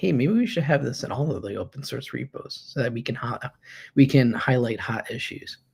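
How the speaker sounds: ordinary talk, nothing marked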